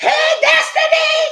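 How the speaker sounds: loud, very high, projected call. Speaker shows how loud others want her friend to talk: loud call. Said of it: "what do you want her to do all that?".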